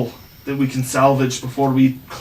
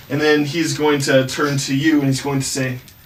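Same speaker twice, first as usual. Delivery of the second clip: usual speaking voice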